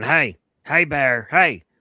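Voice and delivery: mock, repeated, loud, high-pitched shouts. Retelling a video of a man facing a bear: imitating a man yelling. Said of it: "despite dude yelling".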